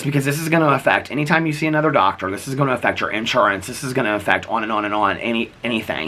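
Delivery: ordinary talk, nothing marked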